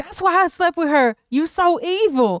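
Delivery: high-pitched voice, lifted into a high register. Recapping a scene, a speaker quotes Marcus's line: high-pitched Marcus voice. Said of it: "he says it in this high-pitched voice".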